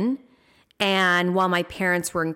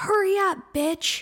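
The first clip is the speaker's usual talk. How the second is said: very high, shrill yelled-out voice; 12 semitones higher than usual. Recalling a bus driver who yelled at them crossing the street, retelling his yell. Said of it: "he yelled out".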